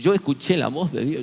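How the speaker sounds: tearful voice, speaking through crying. Retelling what a man said on arriving: imitating someone crying.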